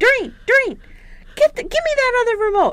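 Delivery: very high-pitched, shrill yell. Retelling how Dad yelled to his wife for the other remote, retelling a yell. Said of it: "he's yelling to his wife".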